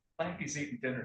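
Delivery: ordinary delivery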